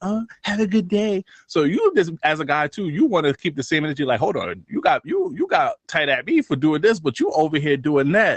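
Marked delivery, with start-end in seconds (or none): 0.0-1.2 small, dainty, tiny, high little voice. Mimicking how girls say goodbye to other women, in a tiny little voice. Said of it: "they be doing that little mini voice".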